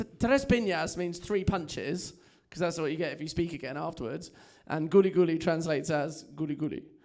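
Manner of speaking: normal talking voice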